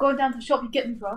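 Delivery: mocking, put-on, slangy young man voice. Explaining how people use a slang phrase, imitating a slangy young guy. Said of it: "People will be like".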